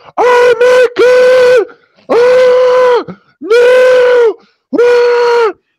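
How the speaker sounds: very high, shrill, panicked, drawn-out shrieks. Voicing soldiers who are burning alive: imitating burning men screaming. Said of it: "These guys are screaming like".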